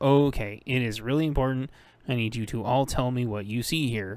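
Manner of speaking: ordinary talk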